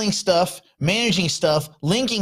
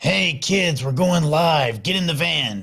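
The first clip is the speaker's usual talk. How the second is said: put-on mock-creepy stranger voice, slower. Joking about pulling up in a van to kids, imitating a creepy stranger. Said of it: "If you pulled up in a van and you were like".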